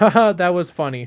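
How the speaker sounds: mock dead, humourless, unamused delivery, a bit loud. Retelling watching a Billy D stream: imitating own deadpan reaction. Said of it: "deadpan the whole time".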